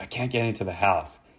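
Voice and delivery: panicked, hysterical sobbing, words barely getting out. Retelling what a locked-out seventeen-year-old said: imitating someone sobbing hysterically. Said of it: "he's, like, sobbing. He's going hysterical".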